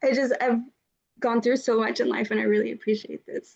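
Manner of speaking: crying, tearful, breaking voice. Answering the host's good news, moved to tears: crying while speaking. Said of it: "I'm literally crying right now".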